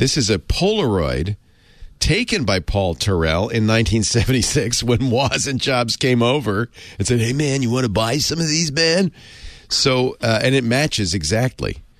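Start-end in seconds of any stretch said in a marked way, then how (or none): 7.2-9.1 seventies drug-dealer voice with sales patter. Telling how Woz and Jobs pitched Paul Terrell, in a Cheech and Chong-style drug dealer voice. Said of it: "I love your 70s drug dealer voice".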